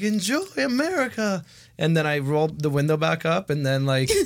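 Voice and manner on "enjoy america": put-on friendly, high-pitched Southern accent. Retelling a friendly man's greeting, their first interaction in America, imitating a Southern accent. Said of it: "First time we heard a Southern accent".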